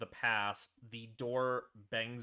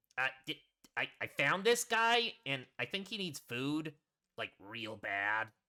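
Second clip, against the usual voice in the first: little goblin voice, higher; 3 semitones higher, 3 dB louder than usual. Voicing a goblin carrying a larger person through a door, small goblin voice. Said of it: "you see the small goblin".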